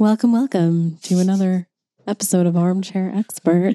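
put-on radio host announcer voice. A host jokingly opens the episode like Armchair Expert, in a Dax Shepard-style radio voice. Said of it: "Is that a good radio voice?".

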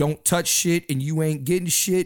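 plain

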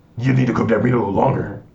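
commanding, authoritative tone. Joking about a show hosted by guys, mimicking one in an authoritative voice. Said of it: "Talking in authoritative voices".

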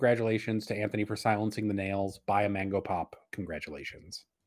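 ordinary talk

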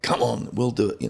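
put-on hearty, insistent, coaxing bellow. The speaker retells what a man bellowed at him a second time: retelling a bellow. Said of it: "So he really bellowed again".

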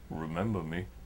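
very deep, chilling, menacing low voice. Retelling a customer who left without his comic: imitating a menacing customer. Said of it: "chills me to the bone, looks into my soul".

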